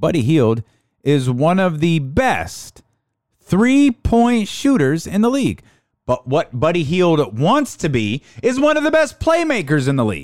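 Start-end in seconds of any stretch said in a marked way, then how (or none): 0.0-5.6 slowed, deliberate delivery, each word laid out. Speaker repeating a point about a player, saying it slower this time. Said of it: "I'm going to say it slower this time".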